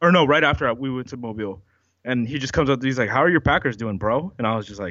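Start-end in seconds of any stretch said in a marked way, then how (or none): none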